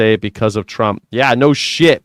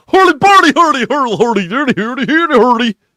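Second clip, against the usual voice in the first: very high, put-on Swedish-style babbling gibberish; 13 semitones higher, 3 dB louder than usual. Explaining a Muppets character: Swedish Chef voice. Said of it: "it's the Swedish chef on um on the Muppets".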